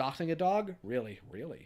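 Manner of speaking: ordinary talk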